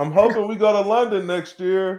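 very high projected call. Repeating a hope so the wife at home can hear: louder. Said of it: "say it a little louder if she's home".

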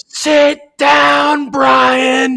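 shrill, very high, loud yelling shout. Retelling a fan behind the bench: imitating a fan yelling. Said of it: "He was yelling at him".

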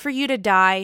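utterly affectless, flat, emotionless deadpan. Retell Ariana's answer when Sandoval asks if she needs something, imitating someone speaking with no emotion. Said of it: "she just says with no emotion".

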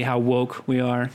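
ordinary talk

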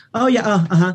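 uninterested, dismissive, offhand brush-off. Retelling how an artist greeted a person at a nightclub: imitating a dismissive greeting. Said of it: "just so dismissive".

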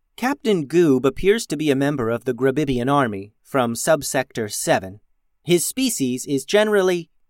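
usual speaking voice

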